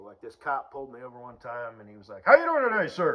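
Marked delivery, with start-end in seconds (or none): 2.3-3.2 shrill, very high, loud yelling. Retelling a traffic stop, imitating a police officer yelling. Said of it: "Why you fucking yelling at me".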